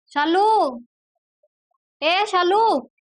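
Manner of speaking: high, loud yell projected far. Sister-in-law calling Shalu to come to her: yelling for Shalu. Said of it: "क्यों चिल्ला रही हो".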